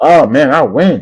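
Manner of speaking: slight put-on Southern accent, teasing tone. Mocking an arrogant college football rival's media talk, in a slight southern accent. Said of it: "a little southern accent".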